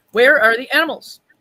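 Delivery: furious, very loud, high-pitched, very angry voice. Retelling what a man at a fiber festival asked, mimicking a very angry voice. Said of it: "in this very angry voice".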